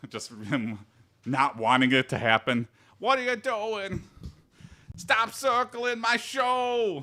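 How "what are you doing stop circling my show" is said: horrible put-on Boston accent, very high, show stretched. Describing Bill Burr stopping a circle pit at his show: horrible Boston accent as Bill Burr. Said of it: "that's my horrible Boston accent".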